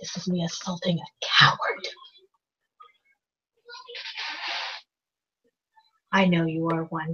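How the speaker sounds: very hushed, very quiet, low voice. Character speaks to a man after spitting on the ground: said low, only for him. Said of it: "I say this low enough only for him to hear".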